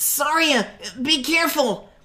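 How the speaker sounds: worried high shout. Narrating, Mido calls after Saria as she pushes past: worried shout. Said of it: "There was concern in Mido's voice as he shouted".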